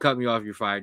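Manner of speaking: usual speaking voice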